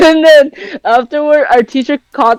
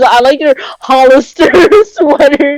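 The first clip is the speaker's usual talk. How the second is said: normal talking voice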